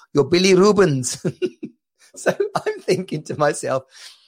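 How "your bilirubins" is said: fake Indian accent, pitched higher. Retelling a man on a bad phone line, in his Indian-y accent. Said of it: "I got a sort of Indian-y accent".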